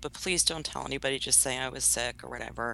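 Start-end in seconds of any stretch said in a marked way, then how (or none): none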